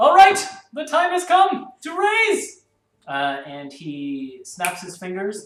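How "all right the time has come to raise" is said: booming, very loud, high-pitched shout. Voicing a character calling out to the whole room: shouting to the room in character. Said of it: "shouts out to the room".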